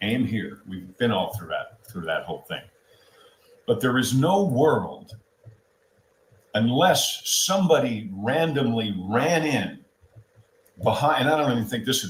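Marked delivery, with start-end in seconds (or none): 3.7-12.1 a little sarcastic, openly annoyed, irritated tone. Dismissing the idea that someone ran in behind: sarcastic and angry. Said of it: "I'm being a little bit sarcastic now because I'm pissed off".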